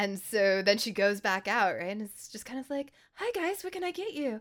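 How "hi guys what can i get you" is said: very high, giggly, bubbly customer-service voice. Recounting a waitress who hates her table going out to greet them, imitating a bubbly waitress. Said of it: "Flo is all bubbly and whatever out by the tables".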